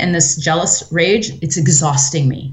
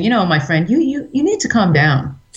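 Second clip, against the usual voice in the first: mock condescending, talking-down tone; 3 semitones higher than usual. Retelling a character talking down to Jose, mock-condescending. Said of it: "he's very condescending in nature to Jose".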